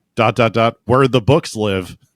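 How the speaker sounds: usual speaking voice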